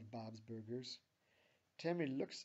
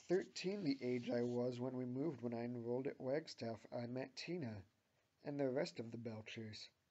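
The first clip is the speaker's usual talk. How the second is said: ordinary delivery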